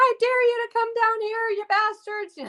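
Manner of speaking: very high, all-out screaming yell. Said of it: "I was yelling at the sky".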